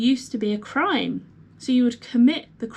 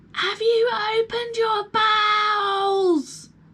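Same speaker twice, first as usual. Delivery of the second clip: put-on very high shout, bowels drawn out; 10 semitones higher than usual. Retelling asking a deaf patient a question: retelling shouting at a patient.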